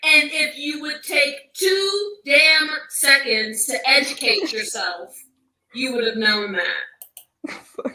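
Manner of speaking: patronizing, condescending, lecturing tone. Reacting to a clip in which someone is told to educate themselves: condescending.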